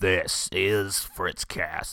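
slow, dramatic low voice. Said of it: "I dramatically lower my voice and I go".

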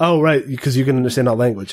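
ordinary delivery

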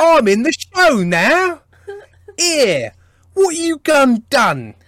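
over-the-top mock British accent. Retelling how a British character turns up on a show: mock British accent. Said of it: "somebody rocks up and goes".

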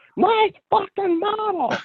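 mock shrill, very high-pitched shouted outburst. Retelling jumping out and yelling at the home teachers: imitating own yelling. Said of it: "just yelled at the home teachers".

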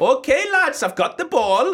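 bad Welsh accent, very high and loud. Speaker improvises as a club rugby player on the pitch, Welsh accent slipping to Aberdeen. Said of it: "You're now near Aberdeen with your accent".

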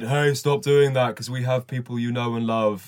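put-on spooky, eerie voice. Recounting what a voice said after destroying the factory, spooky voice. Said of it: "a spooky voice said".

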